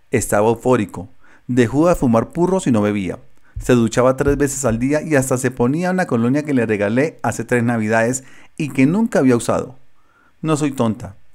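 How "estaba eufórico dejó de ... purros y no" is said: usual speaking voice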